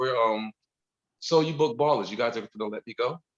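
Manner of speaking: ordinary talk, nothing marked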